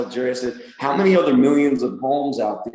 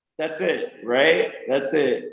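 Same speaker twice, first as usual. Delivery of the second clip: plain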